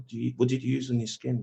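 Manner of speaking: hushed, half-whispered, breath-only voice. Retelling how a mate quietly asked about skincare in the kitchen: imitating a friend half-whispering. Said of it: "whisper to me".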